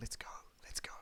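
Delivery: very quiet, soft, hushed, urging whisper. A character taps his companion a couple of times and whispers down to him. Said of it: "just like whispers down".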